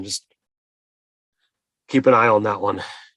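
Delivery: whispered under the breath, muttered and hushed. A character turns toward the others and speaks aside to a companion, whispered under his breath. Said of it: "he whispers under his breath".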